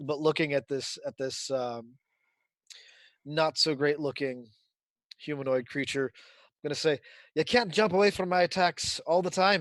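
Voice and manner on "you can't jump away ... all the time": put-on Scottish accent. Voicing a character taunting an enemy in melee: Scottish accent. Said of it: "And I am doing a Scottish accent".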